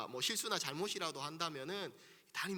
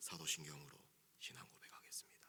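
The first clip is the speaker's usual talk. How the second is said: hushed, breathy, reverent and solemn tone; 12 semitones lower, 11 dB quieter than usual. Pastor recalls rehearsing a worship line at home: imitating his past solemn voice. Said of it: "거룩하고 엄숙한 목소리로".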